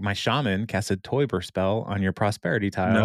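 ordinary talk, nothing marked

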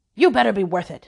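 tossed-off, offhand final remark. A father gets the last word as he storms out of the room, parting shot while storming out. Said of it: "as he stormed out of the room".

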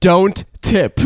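acted-out loud blurting. Retelling what a companion turned and said when the checks came, said loudly. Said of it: "he loudly like turns to me and goes".

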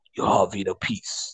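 really deep, breathy, hushed voice. Imagining a calm scene with a flute, someone speaking: really deep voice. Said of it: "with a really deep voice, you're like".

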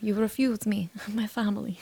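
put-on rough Russian-like accent. Repeating the line back to the other speaker, in a sort-of russian accent. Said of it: "I sort of did like Russian".

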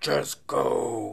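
sudden, loud, growling man's voice.

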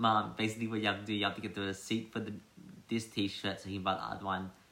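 fast, rattled-off delivery. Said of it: "and I'm like".

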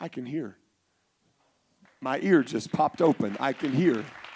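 quiet, low, teary voice.

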